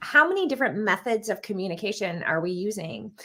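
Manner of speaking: normal talking voice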